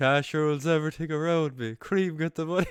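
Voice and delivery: fake drunken Cork accent, shouted. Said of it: "really pissed with a Cork accent, just go".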